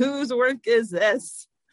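mock, high-strung, slow, mild, held-back angry yell. Recounting someone marching into the office with people behind him, retelling a scream.

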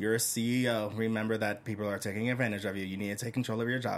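low, flat, machine-like, unvarying monotone drone. Recounting how a narrating voice sounded, imitating a monotone voice. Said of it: "It was very monotone. Her voice like".

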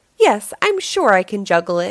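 plain

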